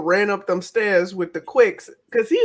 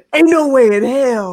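louder put-on announcer-style voice; 2 semitones higher, 5 dB louder than usual. Speaker retelling how Nate reacted, imitating Nate's announcer voice. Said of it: "Announcer-ass Nate was like".

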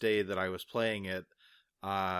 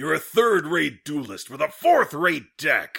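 mock anime-villain voice, higher and louder; 7 semitones higher, 10 dB louder than usual. Someone asks for a Kaiba, so the speaker delivers one: Kaiba impression. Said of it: "Give me a Kaiba".

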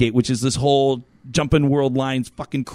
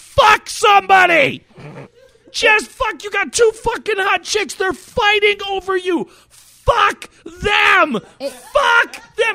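very high, drawn-out, acted-out shrieking yell; 4 dB louder than usual. Describing watching anime, imitating screaming at the TV. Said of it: "you just scream at the TV".

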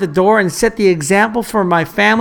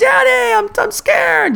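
mock child's yell, much higher. A father retells his son calling out from bed, retelling a child's yell. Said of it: "he yelled".

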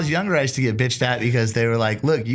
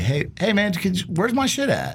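mock-casual joking tone, put-on, much higher pitch; 6 semitones higher than usual. Retelling how he first asks about his missing things, in a retold joking tone. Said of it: "very jokingly laugh about it".

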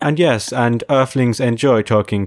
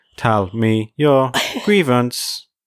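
slow, eerie, creepy automated robotic voice; 2 semitones higher than usual. Imagining future customer service phone lines: creepy robotic voice. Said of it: "that creepy robotic voice of".

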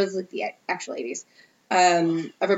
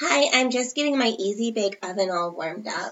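small-voiced delivery; 3 semitones higher than usual. Asked to voice an FBI agent with a smaller voice: FBI agent with a small voice. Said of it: "That was really good".

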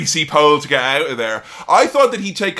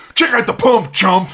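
pitched-up, showy, swaggering, boastful wrestler voice; 6 semitones higher than usual. Retelling a badly mixed wrestling promo: Hulk Hogan impression.

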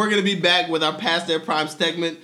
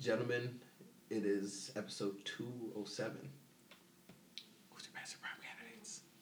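funny little spooky voice, much quieter; 7 semitones lower, 23 dB quieter than usual. Opening episode 207 on Halloween, speaking in a funny little spooky voice. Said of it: "I gotta speak in that funny little spooky voice".

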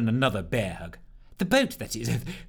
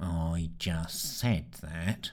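dull, low, very slow mutter; 6 semitones lower, 7 dB quieter than usual. Sneer speaks up again though no one seems to hear him, murmured. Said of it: "Murmured Sneer".

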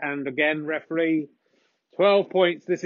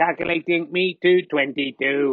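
machine-like computer voice, much slower. Commentating a snooker frame, announcing a player's score: computer voice. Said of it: "I'm in computer voice there".

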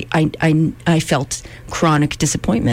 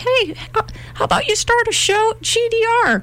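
put-on small child voice, much higher pitch. Acting out a tiny voice that suggested starting a show, little 4-year-old voice. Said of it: "I think it's like a 4-year-old voice".

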